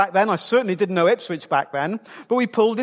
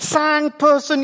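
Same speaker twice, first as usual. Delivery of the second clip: put-on little French man's accent, pitched up; 7 semitones higher than usual. Retelling dad going round French hotels asking for a room: mock French accent. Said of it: "if you use a French accent".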